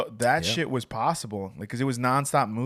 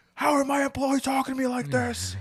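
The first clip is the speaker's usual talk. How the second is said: put-on, very high, outraged, angry outburst voice; 14 semitones higher than usual. Retelling how Kenny reacted to being talked back to: imitating Kenny angry. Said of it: "He would get so mad at me".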